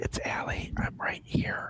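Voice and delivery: hushed, very quiet whisper up close. Playing a character who gets close to Chaz: whispering in character. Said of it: "and I get semi-close to Chaz and just whisper".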